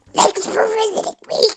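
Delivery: very high voice with gargling. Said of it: "you kinda do a Marge voice".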